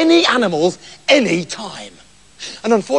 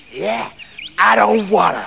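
put-on tough, dangerous-sounding American accent. In a story, a husband scolded by his wife answers in a put-on dangerous American accent. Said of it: "made me sound all dangerous and American".

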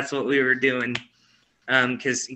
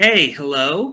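put-on loud old woman's voice calling out; 3 semitones higher, 5 dB louder than usual. Retelling a voice heard at the back door: imitating an old woman's voice. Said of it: "it sounded like an old woman's voice".

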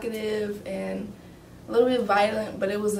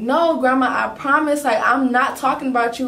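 loud, nervous yell; 4 semitones higher, 8 dB louder than usual. Speaker recalls answering their grandma in front of the family, retelling a nervous yell. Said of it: "So I'm like yelling and like I'm nervous".

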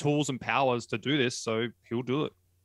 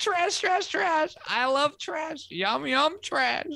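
very high, squeaky, dumb, dopey creature voice. Reacting to a show with another person, doing the new character, Garbage Goober voice. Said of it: "that sort of dopey, dumb".

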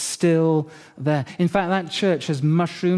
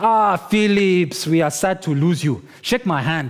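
put-on Nigerian accent. Retelling what another person said to him, in a nigerian accent. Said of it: "Sorry, Nigerian accent".

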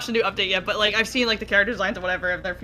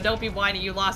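usual speaking voice

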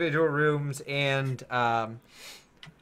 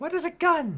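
put-on high-pitched elderly gnome voice. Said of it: "two older gnomes look at you and go".

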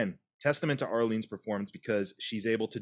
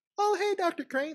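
sugary-sweet, very high hello. Retelling a scene where she greets dr. crane: imitating a sweet greeting. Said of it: "she has this just sweet".

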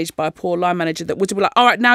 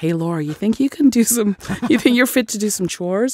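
put-on weird helpful Californian voice. Retelling how her husband spoke to her: imitating husband's weird Californian helpful voice. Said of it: "this weird sort of Californian sort of, like, helpful person".

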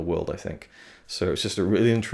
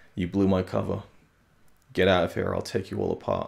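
cold, steely, utterly calm delivery; 3 dB quieter than usual. Retelling the book's version of the scene: imitating a very calm steely delivery. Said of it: "very calm, just, like, steely eyes".

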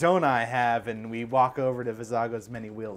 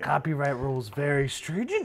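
put-on ancient little green alien voice; 3 semitones higher, 4 dB quieter than usual. Joking with the group about a green alien passenger: Yoda voice. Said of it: "that voice".

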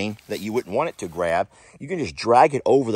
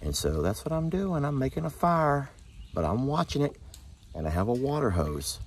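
soft, hushed, murmured running commentary; 3 semitones higher, 9 dB quieter than usual. Speaker watches a fire while Jamie is far off by the shop, talking quietly. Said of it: "I don't know why I'm talking so quiet".

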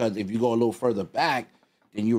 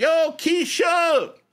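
high, slow, drawn-out yell. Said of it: "you're yelling".

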